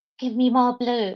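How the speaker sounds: hushed whisper. Acting out someone asking a magic hole for a color: whispering. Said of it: "they go and whisper".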